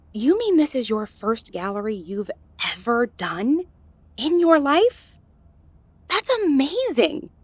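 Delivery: high, loud, stunned and amazed disbelief. Learning this is the artist's first gallery ever: shocked.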